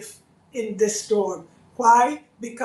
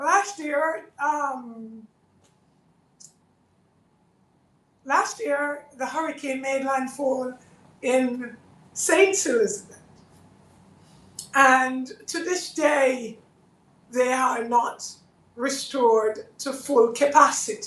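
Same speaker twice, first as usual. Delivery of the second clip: slightly emotional, choked up, halting, with drawn-out um; 2 semitones higher than usual. Urging listeners in the hurricane's path to take shelter, getting a little emotional. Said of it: "I'm getting a little, uh, emotional".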